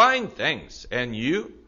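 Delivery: chirpy, bright, cheerful, upbeat delivery. Demonstrating the textbook reply to How are you, in a bright cheerful voice. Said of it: "그것도 명랑한 목소리로".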